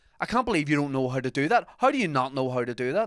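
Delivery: worked-up, swooping rant. Retelling a man getting agitated over topping up his card: imitating an agitated raised voice. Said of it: "the guy starts like raising his voice".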